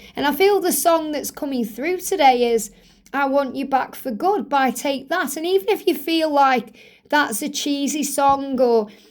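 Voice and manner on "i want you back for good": ordinary delivery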